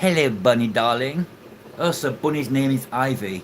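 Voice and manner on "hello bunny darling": put-on plummy, posh, upper-class English accent. The speaker greets Bunny in a posh English accent. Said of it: "Said in my posh English ac- accent".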